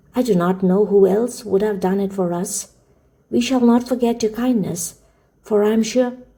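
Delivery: plain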